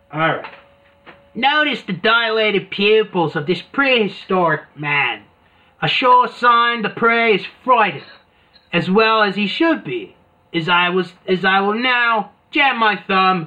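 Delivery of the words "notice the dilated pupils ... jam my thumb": fake Australian accent, played up. Narrating about a prehistoric man, put-on australian accent. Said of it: "I will do my Australian voice".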